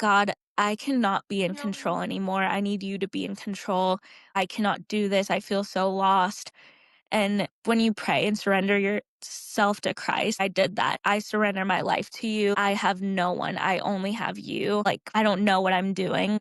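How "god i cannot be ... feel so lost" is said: mock sobbing, acted crying voice. A speaker retelling praying to God on the couch, retelling a sobbing prayer. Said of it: "I'm sobbing and I'm crying on my couch and I'm praying".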